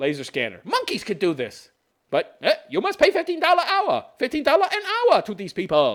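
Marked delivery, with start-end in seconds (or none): 2.7-6.0 really bad put-on Chinese accent, pitched way up. Speaker ranting about cashiers' wages, in a really bad chinese accent. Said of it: "that's my really bad Chinese. Why am I doing a Chinese accent?".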